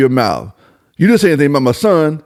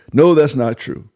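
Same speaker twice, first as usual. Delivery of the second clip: very calm, composed, put-on cool unbothered delivery. Mocking how a reporter answers claims about Bron, calm Brian Windhorst impression. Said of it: "In a very calm demeanor voice".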